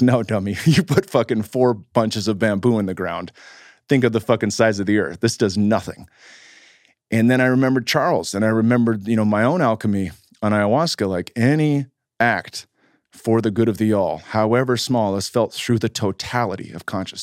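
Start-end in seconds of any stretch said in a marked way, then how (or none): none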